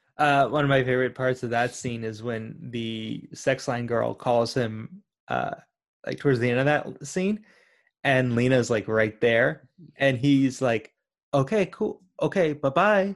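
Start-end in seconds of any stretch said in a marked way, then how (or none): 11.3-13.2 really nonchalant, casual, unbothered, offhand tone. Retelling a favorite scene where he hangs up on a caller, imitating a nonchalant tone. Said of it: "hangs up like really nonchalant".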